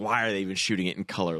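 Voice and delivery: plain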